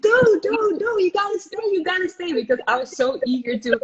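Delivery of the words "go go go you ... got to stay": put-on very high, insistent, repeated screaming. Retelling how a teammate on the pitch kept yelling orders: imitating a teammate screaming. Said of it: "she kept screaming at me".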